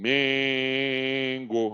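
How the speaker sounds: first syllable "Men" in "Mengo" held long. Teaching the stressed syllable using Flamengo, drawing out Men in Mengo. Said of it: "Qual que eu prolonguei mais? Não é o Men?".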